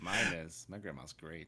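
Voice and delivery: creepy-sounding delivery. Answering a remark that grandmas are nice: creepy-sounding delivery. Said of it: "that sounded a little bit creepy the way you said that".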